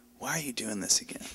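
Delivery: earnest, soft and quick. Speaker retells what she asked a pregnant friend, retelling a sincere question. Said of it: "I genuinely asked her without any sarcasm".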